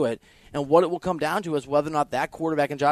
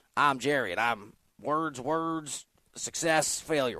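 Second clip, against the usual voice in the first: slow, rambling, meandering delivery; 6 dB quieter than usual. Making fun of a rambling word salad heard on an affiliate: mocking Jerry Jones impression. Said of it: "Jerry Jones threw a word salad at us".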